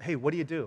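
mock condescending, patronizing tone. Retelling what someone asked a stay-at-home mom: imitating a condescending tone. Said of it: "condescendingly said to this one stay-at-home mom".

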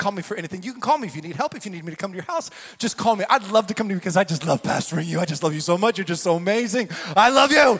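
low, gushing, fawning, doting preacher voice. Speaker describing church figures, imitating a doting pastor. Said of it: "He's like".

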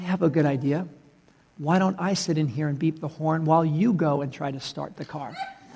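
very gentle, mild, soft voice. Retelling how a lady spoke to an angry driver: imitating a very gentle voice. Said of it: "says very gently to him".

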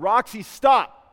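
very loud, firm and stern. A parent retells calling out to their four-year-old near traffic, retelling a stern command. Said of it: "And I said it very sternly".

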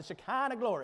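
put-on Southern preacher accent in pulpit style. Teaching a Bible lesson, saying a phrase in a Southern preacher voice. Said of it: "you got to say that like a Southern preacher".

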